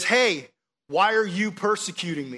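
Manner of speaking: mock big, loud, booming divine voice from above. Speaker imagines Jesus appearing to a listener on the way home; loud, booming voice as Jesus. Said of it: "in this loud, booming voice".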